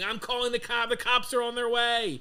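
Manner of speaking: put-on very high, shrill, unhinged screaming. Retelling how a man in his car threatened to call the cops: imitating someone screaming.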